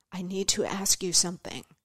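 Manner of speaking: soft, hushed voice dropped to a half-whisper. Retelling how a woman from the audience leaned in: imitating someone half-whispering. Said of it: "she drops her voice to a whisper".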